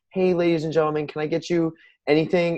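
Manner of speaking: fake-friendly, put-on salesy service voice. Showing how the speaker talks to beach customers: put-on salesy customer-service voice. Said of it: "I start talking like this".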